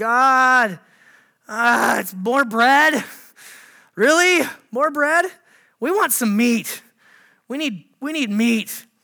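mock very slow grumbling, God dragged out. Retelling the people complaining to God about the bread, imitating complaining. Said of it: "they start complaining about the bread".

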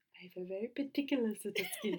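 pitch swooping up and down. Doing an impression of a film line: Liam Neeson impression. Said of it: "That was Liam Neeson".

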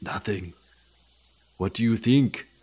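put-on Austrian accent. Acting a movie scene with the other speaker: Arnold Schwarzenegger impression. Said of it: "am I gonna do Arnold again?".

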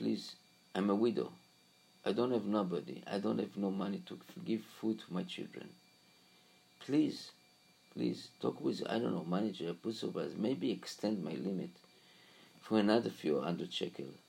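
hushed, pleading, begging half-whisper. Retelling a widow begging a bank teller to extend her limit: imitating a half-whispered plea. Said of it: "She whispered to him".

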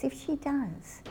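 very soft, hushed, really quiet, slightly high voice. Quoting a daughter speaking of her mother after a stroke, in a really quiet voice. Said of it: "in a really quiet voice".

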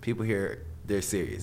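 ordinary talk

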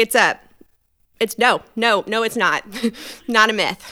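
put-on barely held-together, strained calm. Retelling a reply to a date, imitating a forced calm voice. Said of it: "in the calmest voice that I can muster".

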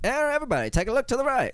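old-fashioned put-on voice. Giving rail tours around Letcher County, the guide addresses everybody in old timey voice. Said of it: "talk like the old timey voice".

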